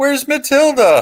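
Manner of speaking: put-on very high, squeaky, shrill little-kid yell. Telling a story about wrestlers arriving, the speaker imitates a squeaky little kid yelling. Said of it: "some little kid with a squeaky little voice yells".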